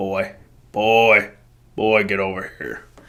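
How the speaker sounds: deep, low, slow, drawn-out warrior voice. Talking about how a game changes his speech, doing a Kratos impression. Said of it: "That's my best Kratos impression".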